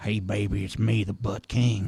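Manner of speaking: put-on whispering. Retelling teasing someone from behind: imitating whispering in ear. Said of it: "whisper in her ear".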